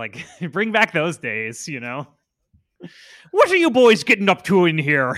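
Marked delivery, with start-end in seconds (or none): 3.3-5.2 put-on very loud Irish cop accent. Discussing cops in movies, the speaker does an Irish cop stereotype voice. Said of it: "every cop was like an Irish stereotype".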